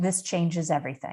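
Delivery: ordinary talk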